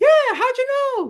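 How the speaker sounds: very high, loud cartoon squeak. Retelling a visit, the speaker repeats the lady's reply in a Mickey Mouse voice. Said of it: "That's like a Mickey Mouse voice".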